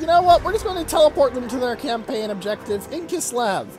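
plain

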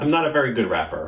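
ordinary delivery, nothing marked

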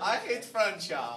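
put-on acted German boy voice. Playing a german boy in a propaganda skit: playing a german boy. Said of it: "German boy".

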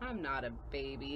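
muttered under breath. The little one objects to being called the baby, muttered. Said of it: "muttered the little one".

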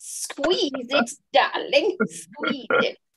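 bad put-on Russian accent. Recalling a posture lesson, speaker quotes the man's advice in a bad fake russian accent. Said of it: "it's supposed to be Russian, and that's not a Russian voice".

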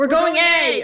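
full-on loud, high-pitched shouted yell. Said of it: "please don't yell".

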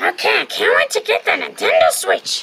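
high loud cartoon voice. Speaking to Iggy on their last pizza delivery, in a Toad voice. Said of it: "You sound like Toad".

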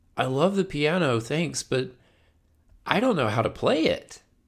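put-on high, young schoolchild voice. Recalling speaking to Mom about a new piano as a child, second grade voice. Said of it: "I said in my second grade voice".

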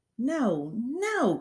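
high-pitched crying out. Narrator reading a character's protest in an argument, crying out. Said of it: "cried Miss Honey".

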